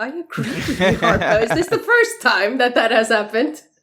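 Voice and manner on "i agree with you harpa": acted surprise, sounding genuinely taken aback. Repeating the other speaker's words back: imitating a surprised tone. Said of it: "You sound very surprised when you said that".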